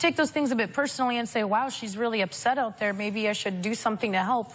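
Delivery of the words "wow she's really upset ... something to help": ordinary talk, nothing marked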